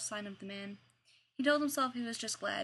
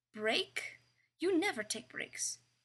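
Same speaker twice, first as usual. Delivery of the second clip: wary, doubting, suspicious and pitched up; 6 semitones higher than usual. Narrator reads a man's question after another announces a break, suspicious. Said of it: "he asked suspiciously".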